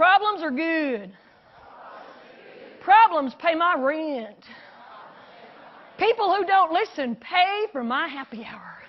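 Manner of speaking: fake, put-on Texas accent. Speaker leading an audience in a repeat-after-me phrase, fake texas accent. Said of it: "in your best fake Texas accent".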